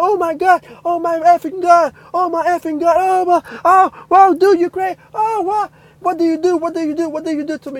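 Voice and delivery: wild, astonished outburst. Retelling how a guy reacted, the speaker imitates him freaking out. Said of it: "and he's going crazy".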